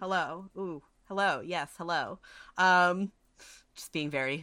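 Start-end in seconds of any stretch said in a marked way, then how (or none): 0.0-2.2 very magnanimous, grandly generous tone. Voicing a character who greets a ship's crew: very magnanimous greeting. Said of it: "just being very, very, you know, magnanimous".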